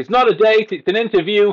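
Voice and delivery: very high, very loud shout. Retelling a film scene, the speaker acts out the woman shouting back: imitating her shouting. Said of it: "And she shouts".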